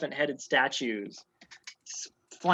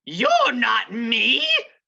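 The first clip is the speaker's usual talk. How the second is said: shrill, loud, screaming outburst; 8 semitones higher, 7 dB louder than usual. Narrating a skull that turns and opens its mouth, screaming in Halster Blackcloak's voice. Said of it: "it screams in Halster Blackcloak's voice".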